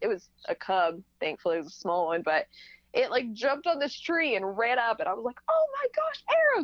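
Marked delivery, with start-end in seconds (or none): 5.5-6.7 very high-pitched yelling scream. Retelling seeing a cub run up a tree, calling to Arrow, retelling a mom-voice scream. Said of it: "I'm like screaming, like mom voice comes out".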